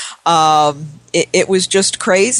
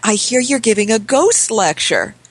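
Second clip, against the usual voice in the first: mock near-whisper, higher; 5 semitones higher than usual. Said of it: "she's almost whispering".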